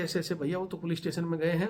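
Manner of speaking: ordinary talk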